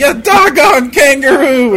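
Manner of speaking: screaming. Voicing an alchemist attacking with two needles: screaming. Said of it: "as he screams out".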